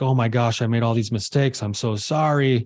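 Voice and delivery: mock sobbing, crying voice. Retelling a man breaking down in a therapy session, imitating someone sobbing. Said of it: "he just like started to sob and cry".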